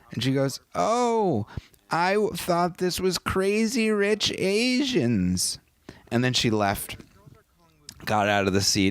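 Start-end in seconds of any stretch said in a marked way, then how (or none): 0.8-5.6 put-on woman's voice, very high and very slow. Retelling what a woman in the theater said, imitating a woman's funny voice. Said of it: "I'll just use that voice because it's funny".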